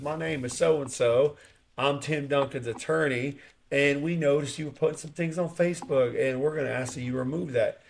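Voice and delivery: nice, courteous Southern drawl. Retelling what a southern attorney said on a call, imitating a nice southern drawl. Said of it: "just got this nice drawl accent and says".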